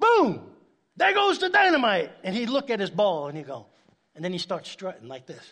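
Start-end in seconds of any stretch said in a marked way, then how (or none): 0.0-2.1 very loud, very high, swooping, shrill, wild yell. Describing a golf partner at impact with the driver, imitating his yell. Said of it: "he would yell out".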